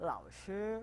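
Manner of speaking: lao low dipping third tone, shi high level first tone. Teaching mandarin tones, saying lao third tone, shi first tone. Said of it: "lao shi itu nada ketiga sama nada pertama".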